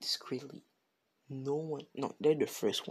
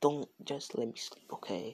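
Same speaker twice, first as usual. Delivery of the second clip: ordinary delivery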